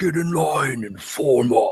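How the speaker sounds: high, guttural, barked shout. Narrating a voice commanding the screaming barbarians; guttural shout. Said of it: "A guttural voice".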